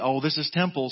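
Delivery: dry, sarcastic, mock-thick delivery. Speaker quotes Brett Faulkner's remark from standing in a circle, with mock sarcasm. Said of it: "said real sarcastically".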